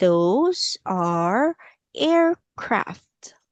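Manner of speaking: very slow, drawn-out reading. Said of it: "Let's say".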